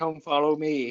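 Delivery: flat, put-on monotone. Joking about how Jesus would not have sounded, monotone Jesus voice. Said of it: "this monotone voice like".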